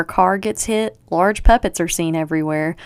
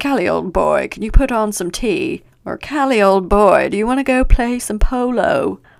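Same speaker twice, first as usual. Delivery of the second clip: pompous, posh, self-important upper-class voice; 3 semitones higher, 3 dB louder than usual. Showing how they always read a character's name, in a put-on pompous voice. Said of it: "read it like this ... very pompous".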